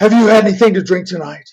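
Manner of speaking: confrontational, pushy, aggressive tone. Retelling a parking lot confrontation, imitating an aggressive man. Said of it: "he's so aggressive".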